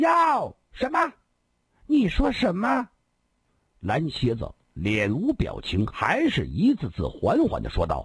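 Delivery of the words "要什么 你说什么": raised, shrill, very high, loud outburst. A character reacts at once to another character's cold demand, spoken loudly. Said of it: "大声地说".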